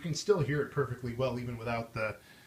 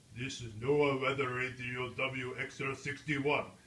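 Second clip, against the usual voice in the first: very slow, droning, robotic broadcast voice; 3 dB quieter than usual. Recalling how the weather radio used to sound, robotic NOAA Weather Radio voice. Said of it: "the way the red, weather radio voice used to sound? It sounded like Arnold Schwarzenegger".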